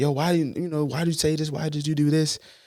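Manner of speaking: heated, angry, very high-pitched yell. Showing how lashing out at a partner would sound: acting out angry yelling. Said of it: "getting angry and yelling like".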